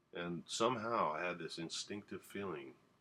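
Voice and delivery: plain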